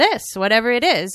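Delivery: plain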